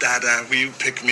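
plain

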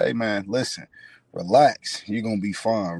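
stern, firm, reassuring delivery. Retelling what the head coach said after the injury: imitating a stern coach. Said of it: "Real stern".

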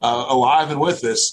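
plain

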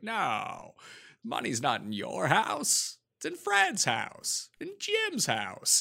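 soft, drawn-out drawl, sounding desperate. Trying a Jimmy Stewart for the others with more drawl, drawling Jimmy Stewart impression. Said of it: "He sounds more desperate".

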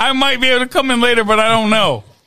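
ordinary talk, nothing marked

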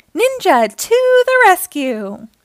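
loud, high, rousing rallying shout. Reading a story: ignoring Dad's pleas, Naughty Ninja shouts. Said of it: "shouted Naughty Ninja".

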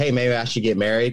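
ordinary talk

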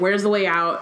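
ordinary talk

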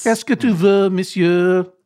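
put-on French accent, like an in-flight announcement. Joining in when someone is asked to do airplane French, fake airplane French. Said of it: "Give us a little of your fake airplane French".

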